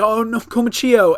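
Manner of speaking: high-pitched yell. Recapping a fight, a character reacts as her ally goes down: retelling Tama yelling. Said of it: "Tama is like yelling".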